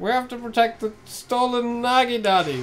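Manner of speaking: put-on senile old man voice. Retelling what the senile old hero keeps saying: imitating Mermaid Man. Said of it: "whatever he says".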